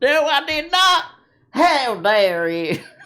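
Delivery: put-on Tennessee accent, very high and very slow. Acting out Tennessee answering a question about a book ban: put-on Tennessee voice. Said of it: "not nice to do that voice".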